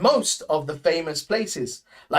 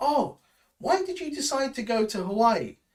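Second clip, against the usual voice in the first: friendly, casual, quick, pitched-up delivery; 5 semitones higher, 4 dB quieter than usual. Demonstrating an example question in a lesson, friendly asking. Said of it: "ask it in a more friendlier way".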